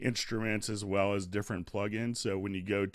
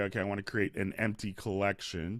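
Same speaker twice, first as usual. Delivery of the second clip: ordinary talk, nothing marked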